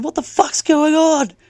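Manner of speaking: slow, high-pitched shouting.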